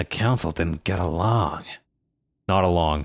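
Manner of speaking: hushed whisper. A character leans in to speak to the listener, whispering. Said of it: "He leans in and whispers to you".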